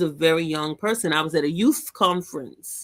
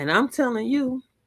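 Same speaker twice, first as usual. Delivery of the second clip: ordinary talk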